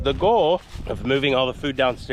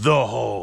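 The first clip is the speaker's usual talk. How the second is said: as deep as possible, booming voice. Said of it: "in the deepest voice ever".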